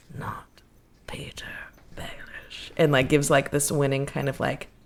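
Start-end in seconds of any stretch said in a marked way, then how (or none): 0.2-2.7 very quiet, growly, breathy whisper. The narrator voices a man introducing himself during a handshake: growly whisper. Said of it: "in this like growly whisper".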